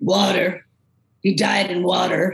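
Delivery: slow, abrupt, blunt, cutting-in delivery. Retelling how a psychic interrupts someone in a clip: imitating Sylvia Browne's voice. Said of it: "'cause her voice is, is like Linda Blair".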